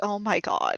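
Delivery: utterly fed-up, exasperated voice. Voicing Marge pinching the bridge of her nose: exasperated Oh my god. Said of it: "Marge pinching the bridge of her nose like".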